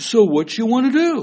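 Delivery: put-on speaking with English accent. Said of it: "speaking in an English accent".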